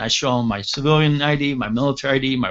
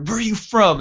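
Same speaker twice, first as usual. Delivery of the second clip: put-on Italian accent, Rhode Island style; 7 semitones higher than usual. Retelling a man questioning his buddy, in a thick Rhode Island Italian accent. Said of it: "this thick Rhode Island, you know, Italian accent".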